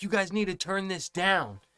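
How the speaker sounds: put-on shouting. Retelling telling a noisy group to turn it down, retelling a shout. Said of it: "I have to shout for them to fucking hear me".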